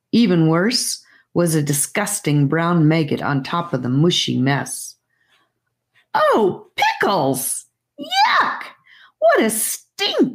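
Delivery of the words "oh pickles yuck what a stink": very high, swooping, drawn-out wail of disgust. Opening a bag to find stinking mush and a maggot, he is crying out in disgust. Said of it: "he cried".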